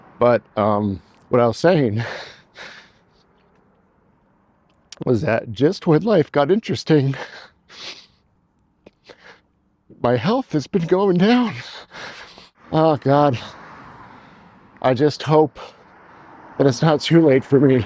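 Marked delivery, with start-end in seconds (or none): 1.3-17.9 tearful speech, crying through the words. Explaining to viewers that health declined just as life got interesting, crying while talking. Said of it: "I haven't cried in a while".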